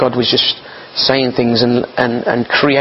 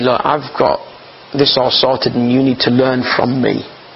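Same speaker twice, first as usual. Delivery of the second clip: ordinary talk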